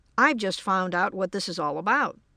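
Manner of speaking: ordinary delivery, nothing marked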